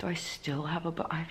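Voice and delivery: soft, quiet hushed whisper. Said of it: "I'm talking quietly 'cause Joff's sleeping".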